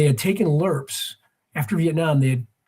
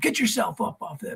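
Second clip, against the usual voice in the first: mock yelling, higher; 5 semitones higher, 6 dB quieter than usual. Retelling an officer finding resting soldiers: imitating an officer yelling. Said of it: "he starts yelling at those guys".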